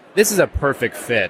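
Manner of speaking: ordinary delivery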